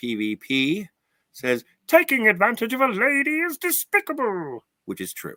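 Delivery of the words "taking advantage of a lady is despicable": very high-pitched cartoon hero voice. Giving a show's verdict on a detective character, in a Dudley Do-Right voice. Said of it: "I had to do the Dudley Do Right voice".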